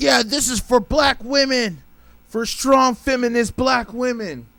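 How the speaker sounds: thrilled, gushing, high-pitched excited cheering. Retelling an Oscar win celebration: imitating someone all excited. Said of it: "all excited".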